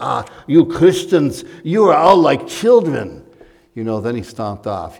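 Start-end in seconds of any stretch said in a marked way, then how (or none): 0.0-3.3 put-on poor Romanian accent, higher, louder. Quoting a contemptuous Romanian businessman, in an attempted Romanian accent. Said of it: "I can't really do the Romanian accent very well".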